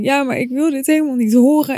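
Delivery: put-on, high, blubbering, sobbing ugly cry. Retelling a phone call to dad, quoting own past words, imitating own ugly crying. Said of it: "Maar ik zat daar maar met mijn ugly cry en ik zei zo van".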